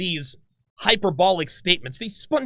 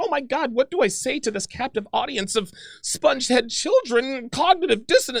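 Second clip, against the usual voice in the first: put-on flustered, frantic, panicked outburst; 4 semitones higher than usual. Mocking her account of panicking by the radio: imitating her panicking. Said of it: "I'm wringing my hands and panicking".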